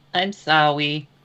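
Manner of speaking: put-on little kid's voice. Voicing a character who apologizes to the innkeeper: child's voice. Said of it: "says in a child's voice".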